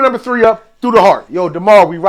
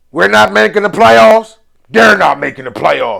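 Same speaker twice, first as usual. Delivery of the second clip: big, rough-edged, thoroughly country cowboy voice. Retelling a coach's pregame answer to reporters: Dan Campbell big country cowboy voice. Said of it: "with that big country cowboy voice".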